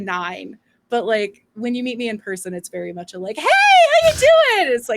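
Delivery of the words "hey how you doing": over-the-top, very high, drawn-out gushing voice. Retelling meeting people in person at conventions: imitating own dialed-up-to-eleven greeting. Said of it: "dialed up to eleven".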